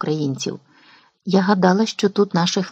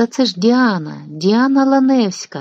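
glad, joyful exclaimed cry; 4 semitones higher than usual. Someone recognizes a woman and calls out before appearing at a window, joyfully exclaimed. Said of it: "радісно вигукнув хтось".

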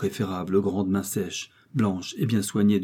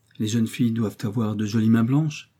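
plain

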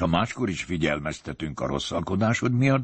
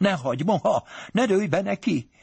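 higher-pitched frightened cry; 14 semitones higher than usual. Reading a story aloud, the narrator voices a character crying out in fright. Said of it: "rémülten felkiáltott".

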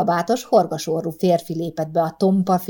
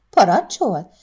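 startled, taken aback, caught off guard; 3 semitones higher, 3 dB louder than usual. A woman responds to a man's order; taken aback. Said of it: "kérdezte Pirike meghökkenve".

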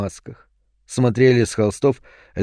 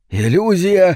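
high, shrieking, wailing scream; 7 semitones higher than usual. Falco, seeing rough stone where the door used to be, screams. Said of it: "завопил Фалько".

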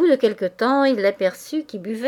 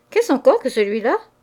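astonished, taken-aback surprise; 4 semitones higher, 4 dB louder than usual. Reading a man's question to two sisters about a dance partner, astonished. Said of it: "Il s'étonna".

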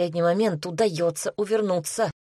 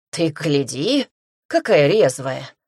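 puffing through gritted teeth, slower; 3 semitones lower, 4 dB louder than usual. Narrator reads a captor's line as he drags the narrator toward an altar, puffing through gritted teeth. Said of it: "пыхтит сквозь зубы зирбух".

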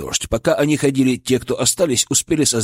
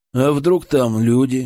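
wryly ironic, slower. As Fyodor raises a stone toward the crack, his brother remarks ironically. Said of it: "иронично заметил его брат".

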